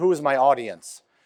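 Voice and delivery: normal talking voice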